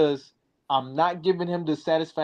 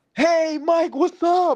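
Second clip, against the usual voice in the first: put-on mad-energy hype, very high-pitched and loud; 13 semitones higher, 5 dB louder than usual. Retelling how another guy greeted him, imitating someone hyped. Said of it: "With mad energy".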